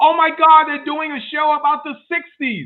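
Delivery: shrill shriek, very high-pitched and very loud. Retelling a reaction during preview week, imitating own past scream. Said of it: "I remember literally screaming".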